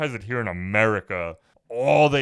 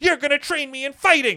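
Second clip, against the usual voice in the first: mock bratty kid voice, higher and louder; 4 dB louder than usual. Retelling a movie's last scene, quoting the eight-year-old boy: imitating a bratty boy. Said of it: "over-exaggerating how bratty he sounded".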